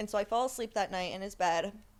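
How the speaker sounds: ordinary talk, nothing marked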